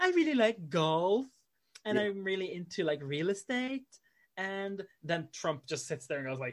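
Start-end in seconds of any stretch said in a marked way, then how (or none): 0.0-3.9 light, charming, pitched-up talk-show voice. Retelling a talk show interview, imitating Ivanka Trump. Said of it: "And Ivanka's going like".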